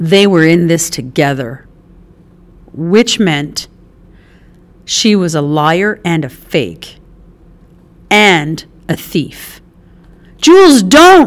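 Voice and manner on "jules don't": very high, shrill, loud shout. Reading a story aloud, one character calls out to stop another: shouting. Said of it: "March shouted".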